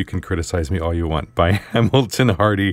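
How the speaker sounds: normal talking voice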